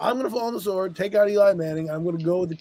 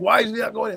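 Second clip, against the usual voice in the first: put-on yelling coach voice, higher-pitched; 4 semitones higher than usual. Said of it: "He's yelling at Bill Belichick".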